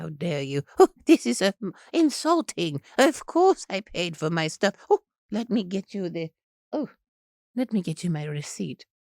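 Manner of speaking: slow put-on grand dame voice. Acting out answering a clerk who asks for a receipt: Maggie Smith voice. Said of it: "I would probably do Maggie Smith".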